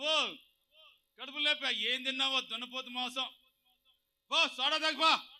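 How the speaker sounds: high, loud, mocking, sarcastic jeer.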